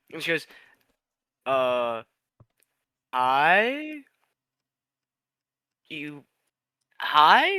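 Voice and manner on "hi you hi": very slow, puzzled, confused, drawn-out delivery. Voicing a character looking up from a book at a stranger: confused. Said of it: "He looks at you very confused".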